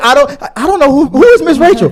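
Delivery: mocking high, loud voice, laughing.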